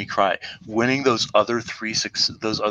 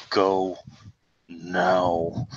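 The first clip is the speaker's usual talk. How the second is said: very low voice, now stretched out; 4 semitones lower than usual. Player in character telling Sketcher to go, very low voice. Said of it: "in a very low voice".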